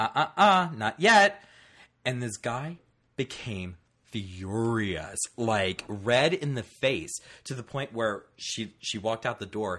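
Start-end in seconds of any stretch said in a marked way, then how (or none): 0.0-1.4 mock, light, courteous, joking tone, pitched up. Retelling how a young lady answered a pushy man, mimicking a polite joking reply. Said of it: "politely, jokingly turns around and goes".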